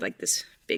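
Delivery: hushed, awed whisper.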